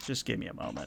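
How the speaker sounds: hushed whisper, barely voiced, very quiet. Voicing a character who turns aside to whisper: whispering. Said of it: "sort of whispers".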